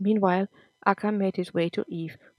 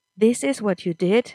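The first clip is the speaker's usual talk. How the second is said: usual speaking voice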